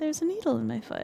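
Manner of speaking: very small, tiny, soft, sweet little voice. Retelling answering her mom who came in, very small sweet voice. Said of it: "very sweet, like very small Virexy voice".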